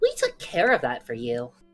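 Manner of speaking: put-on cheerful Midwestern mother voice. In a game, a player voices Ash's line in the cheeriest Midwestern mom voice. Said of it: "like in the cheeriest Midwestern mom voice".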